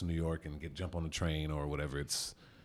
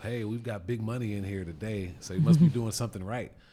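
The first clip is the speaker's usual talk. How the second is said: put-on loud, high-pitched shouted call-out; 5 semitones higher, 6 dB louder than usual. Retelling what a teammate yelled in the locker room: imitating a teammate yelling. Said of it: "I heard Ellis Hobbs yell out".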